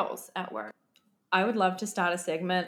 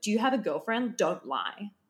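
pushy, confrontational, aggressive, demanding tone; 2 semitones higher than usual. Retelling a girl at a Vancouver club questioning a guy, mimicking an aggressive question. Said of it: "said it like really aggressively".

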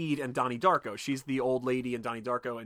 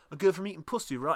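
normal talking voice

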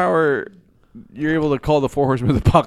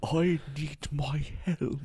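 put-on powerful, dramatic voice, much quieter; 12 dB quieter than usual. Friends discussing a show character, one mimicking how he says a line: imitating a character's dramatic voice. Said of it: "Does he talk like that?".

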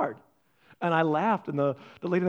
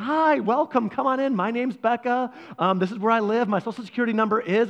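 mock overly friendly, eager, pitched-up voice; 6 semitones higher, 3 dB louder than usual. Retelling how Becca greets a door-to-door salesman: imitating Becca, eager to make friends. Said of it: "and Becca's like".

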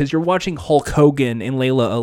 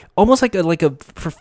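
ordinary delivery

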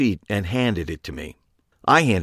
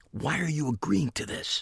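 very quiet, soft, high-pitched whisper; 6 semitones higher, 9 dB quieter than usual. The narrator questions Harry while walking through the shop's aisles, whispered. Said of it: "I whispered to Harry".

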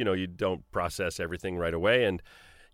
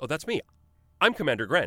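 put-on bright, beaming, pitched-up delivery; 6 semitones higher than usual. Retelling how the voice actor delivered a line, imitating Adrian beaming with a smile. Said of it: "he's got the biggest smile".

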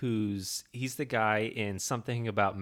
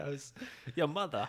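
put-on yelling voice, pitched higher; 6 semitones higher, 5 dB quieter than usual. Imitating Christopher Walken when he yells: Christopher Walken yelling impression. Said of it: "Christopher Walken yells".

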